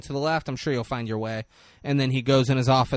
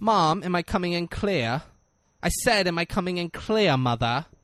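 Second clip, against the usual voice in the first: put-on British accent, nice and slow; 4 semitones higher than usual. Quoting a movie character's line after noting his sudden accent: Mike TV British accent. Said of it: "He did not have a British accent".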